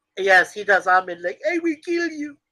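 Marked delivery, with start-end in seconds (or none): 1.4-2.2 squeaky, very high comic puppet voice. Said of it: "because I just did his voice".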